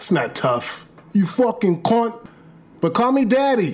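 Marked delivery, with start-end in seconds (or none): 1.1-2.3 English-accented voice. Showing how the insult must be said: english accent. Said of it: "You gotta say it in an English accent".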